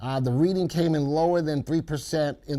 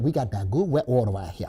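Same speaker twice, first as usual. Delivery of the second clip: quick Louisiana Cajun accent, laid on, put-on; 3 semitones lower than usual. Speaker doing a bit in their Cajun voice, in a Cajun accent. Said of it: "that's that's in my Cajun accent".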